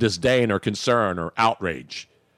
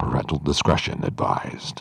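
put-on TV network disclaimer announcer voice; 9 semitones lower than usual. Imitating the guy who does the TV network's content warning: FX announcer voice. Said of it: "I'm doing it in my announcer voice".

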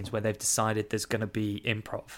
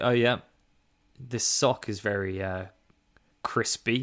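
ordinary talk, nothing marked

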